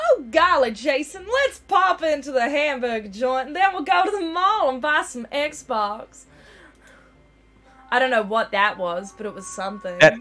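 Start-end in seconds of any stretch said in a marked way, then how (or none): 0.0-6.2 South Carolina and Australian accent blend, higher pitch. Acting out old-fashioned slang for listeners, South Carolina-meets-Australia accent. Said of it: "That sounded like a, if South Carolina was in Australia".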